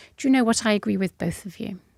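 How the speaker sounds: ordinary talk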